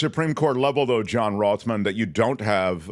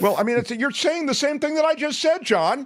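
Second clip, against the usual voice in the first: raised, higher-pitched yelling voice. Interrupting another speaker during a discussion: yelling. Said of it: "Why are you yelling?".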